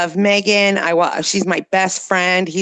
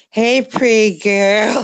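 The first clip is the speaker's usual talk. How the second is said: put-on mushy, unenunciated, creepy slurred mumble. Imitating a man talking to his daughter: imitating a creepy mumble. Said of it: "doesn't enunciate and he says it in the creepiest way".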